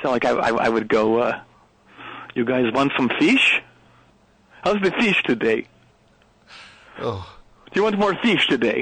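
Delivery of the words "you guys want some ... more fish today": put-on Norwegian accent in English. Showing off an imitation of the people of Norway: Norwegian accent. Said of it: "imitating the Norwegian accent".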